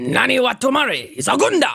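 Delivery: put-on Japanese-sounding speech. Showing how the line should sound in Japanese: more Japanese-sounding delivery. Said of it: "That's how Japanese sounds".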